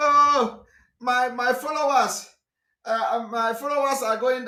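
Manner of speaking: mock, weepy, slow, tearful sobbing voice. Retelling how a follower cried on video: imitating someone crying. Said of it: "I saw one of them crying".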